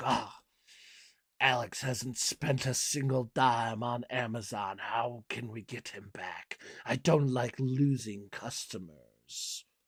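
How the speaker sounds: purring, evil mastermind voice. Speaker acts out Bezos scheming to win back a customer, as a Bond villain. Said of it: "He really is like a Bond villain".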